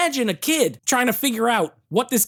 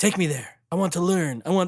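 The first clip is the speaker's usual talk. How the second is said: put-on stilted, halting simple words, no accent; 4 semitones lower, 3 dB quieter than usual. Retelling a movie scene, imitating ancient Casey Jones talking like he doesn't know English. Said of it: "he's talking like he doesn't know English".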